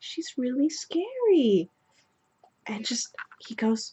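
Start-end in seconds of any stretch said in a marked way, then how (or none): 0.0-1.7 mock bashful little girl voice, meek, high, eerily stretched. Retelling what a girl said while pointing at the speaker, mock-meek and shy. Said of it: "she just very meekly and shyly points at me".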